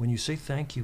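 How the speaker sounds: ordinary talk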